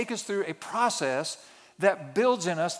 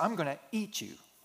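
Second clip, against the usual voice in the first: soft, intimidating, menacing, threatening tone; 7 dB quieter than usual. Retelling playing chase with his little boys, imitating a threatening tone. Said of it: "with the right attitude and the right tone".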